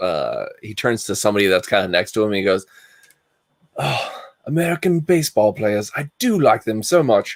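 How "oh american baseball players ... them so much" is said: terrible attempt at English accent. Retelling what a man said to someone next to him, in a put-on English accent. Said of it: "I'm doing an English accent".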